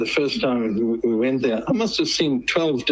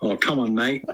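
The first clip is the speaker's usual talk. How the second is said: best attempt at a put-on Australian accent. South African guest asked by the host for their best Aussie accent. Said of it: "give me your best Aussie accent".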